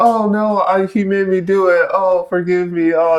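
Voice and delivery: very high, drawn-out, put-on sweet cute pleading. Retelling an anime scene where a character tries to deceive: imitating a character acting cute. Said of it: "trying to be all cute".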